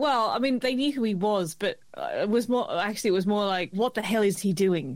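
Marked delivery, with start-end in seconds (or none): none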